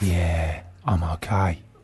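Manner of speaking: very low, soft, put-on husky voice. In a sketch, answering the other character's greeting in a husky voice. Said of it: "Very husky voice you've got there".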